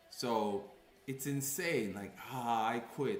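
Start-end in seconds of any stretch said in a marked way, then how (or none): 2.3-3.2 put-on mocking voice, higher and louder. Retelling what a high-school acquaintance said: imitating a mocking remark. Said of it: "he tried to mock me".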